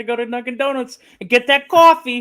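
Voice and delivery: high, unconvincing Boston accent that misses the mark. Telling the others about a coffee gift card, attempted Boston accent. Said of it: "That doesn't sound like Boston".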